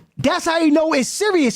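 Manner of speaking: plain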